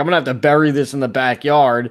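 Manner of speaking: ordinary talk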